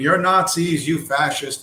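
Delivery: play-acted half-screamed yell imitating a woman. Retelling a woman in a cell phone video, imitating a woman screaming. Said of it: "She's screaming".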